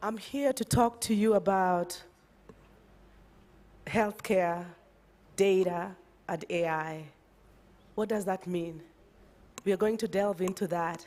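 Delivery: voice cracking a little. Presenter begins a presentation after apologizing for her voice, voice cracking a little. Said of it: "my voice is cracking a little bit".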